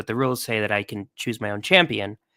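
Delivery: ordinary delivery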